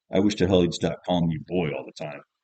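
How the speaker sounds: plain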